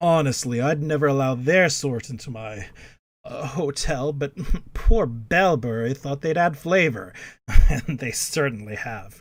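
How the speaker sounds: low, confiding, conspiratorial tone. A game narrator voices a hotel owner greeting newcomers, low and conspiratorial. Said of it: "He lowers his voice conspiratorially".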